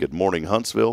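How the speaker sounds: ordinary talk, nothing marked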